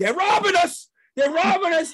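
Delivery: play-acted, very high-pitched, loud yelling. Retelling getting into the car with his son, reenacting his own yell. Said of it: "I'm yelling".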